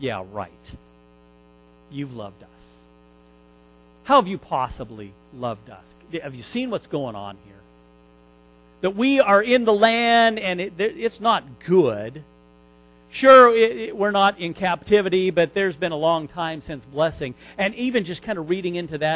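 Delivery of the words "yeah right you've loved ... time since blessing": put-on scornful, accusing sarcasm with swooping tune. Acting out the people answering the Lord: imitating a sarcastic, accusing voice. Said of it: "this sarcastic, maybe this accusative voice".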